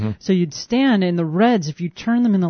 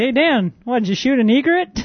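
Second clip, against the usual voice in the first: high, playful, good-natured teasing; 6 semitones higher than usual. Retelling teasing him about a bird he shot, retelling a teasing remark. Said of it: "I was teasing him".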